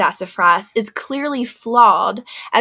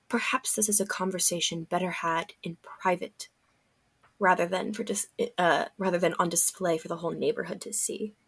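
very quiet, hushed, lowered voice; 3 semitones lower, 13 dB quieter than usual. Turning to another character as an audience gathers, speaking in a lower voice. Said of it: "kind of in a lower voice".

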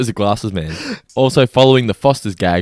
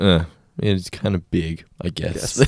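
mock disappointed tone, quieter; 2 semitones lower, 6 dB quieter than usual. Retelling how a cartoon character reacts to the beer: imitating someone disappointed.

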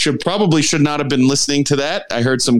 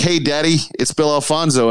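distinctive, peculiar phone voice. Retelling a phone call from referee Bill Alfonso: imitating Bill Alfonso's voice. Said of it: "I couldn't believe he talks like that".

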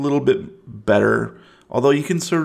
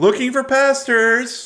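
put-on very high, called-out yell; 12 semitones higher than usual. Asking a player if this is what the character yells: mock yelling. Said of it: "Is that what you're yelling?".

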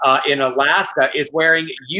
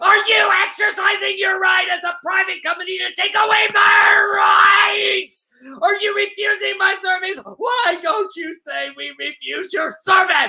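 put-on yelling man's voice, higher. Acting out an angry customer confronting managers: imitating a man yelling. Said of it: "you do not need to yell".

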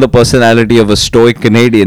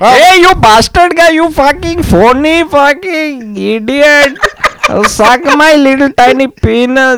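fake Indian accent, very high-pitched; 14 semitones higher than usual. Retelling being bullied, the speaker voices the bully in an Indian accent. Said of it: "being bullied in an Indian accent".

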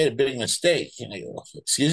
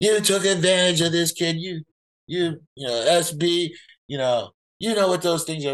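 mock screaming, higher; 4 semitones higher than usual. Retelling a phone call where the boss screams at him: imitating the boss screaming. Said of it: "he starts screaming at me".

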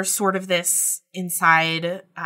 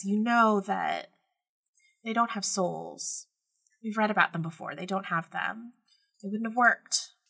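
put-on small, hushed, very quiet voice of a young girl; 3 semitones higher, 3 dB quieter than usual. Voicing the thought in her head as a really quiet 13-year-old girl's voice. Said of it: "a really quiet 13-year-old girl's voice in her head that just says".

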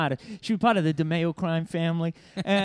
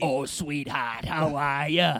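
very slow delivery, every word drawn out; 3 semitones lower than usual. Doing a Big Ange impression for the others: Big Ange voice. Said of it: "let's all do our best Big Ange".

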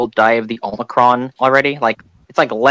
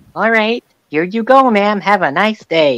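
put-on patient, high, slow talking-down voice; 8 semitones higher than usual. Speaker retelling how they spoke to a woman, retelling talking to her like a child. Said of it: "I treated her like a child".

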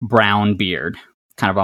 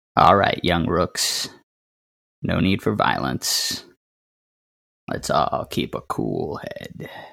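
breathy, soft-spoken, hushed, enigmatic stranger voice; 4 semitones lower, 6 dB quieter than usual. The game master voices the stranger as the players lower their hands: mysterious stranger's voice. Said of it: "And that's when it hits you that you've never seen this person in real life before, but you've seen a painting of someone who looks like this hanging in the basement of the [name]. Looks a lot like Ez".

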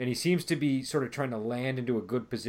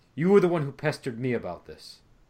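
furious, angry character voice, raised and loud; 6 dB louder than usual. Voicing an angry character accusing a player: angry NPC voice. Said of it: "he's looking very angry right now, and he says".

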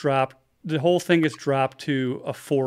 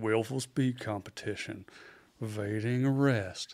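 put-on big, soft Southern lawyer voice; 3 semitones lower, 8 dB quieter than usual. Retelling how a man read out his charges to him, Southern lawyer impression. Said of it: "like a big ass Southern lawyer".

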